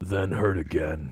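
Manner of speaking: dark, superhero-style narrator voice. Reading a listener email aloud, trading sentences: Batman voice. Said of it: "can you read this with a Batman voice?".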